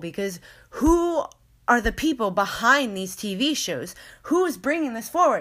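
worked-up, rising, rapid voice. Talking about children's TV shows, the speaker gets heated. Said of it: "now I'm getting heated".

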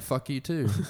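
hushed, grumbled mutter under the breath. Retelling a reply to someone who ignored a greeting: imitating muttering under breath. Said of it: "and under my breath, I went".

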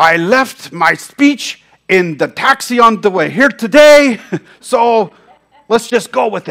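put-on thick German accent, laid on. Retelling a hotel man's opening on stage at a leadership conference: thick German accent. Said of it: "in my thick German accent".

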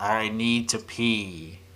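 floaty, ethereal voice, "pee" drawn out. Demonstrating the podcast's segue button sound for the co-hosts, in an ethereal voice. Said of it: "like this like ethereal voice".

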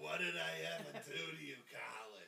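put-on old woman puppet voice, slight New York accent. Speaking as a puppet to a guy who won't talk to it, in an old brooklyn woman voice. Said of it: "a little New York in there".

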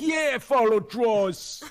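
put-on very high, very slow, loud New York accent. Imitating a guest's line right after hearing it: imitating Coma's New York accent. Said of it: "That's just my version of that".

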